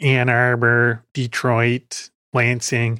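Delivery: put-on very slow, drawn-out Chicago accent, voiceover style. Imitating a hired voiceover lady's line readings, in a Chicago accent. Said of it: "she's got the greatest Chicago accent".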